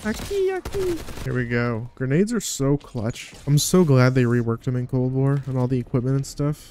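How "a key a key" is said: put-on very high, soft, childlike Mexican boy voice. A gamer begging a teammate to drop a key, sounding like a little mexican boy. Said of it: "I sound like a little Mexican boy".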